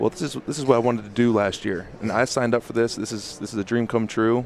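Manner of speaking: normal talking voice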